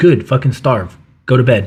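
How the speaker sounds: mock-harsh, stern imitated father voice. Comparing childhoods, the speaker quotes their father's reply: imitating their dad scolding. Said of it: "That was my dad's feedback".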